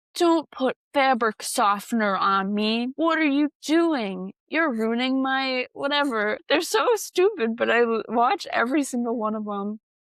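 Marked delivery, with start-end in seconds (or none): 0.2-6.4 put-on cranky, angry character voice. Describing animated videos, voicing a towel with an angry face: imitating an angry talking towel. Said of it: "a face and an angry mouth".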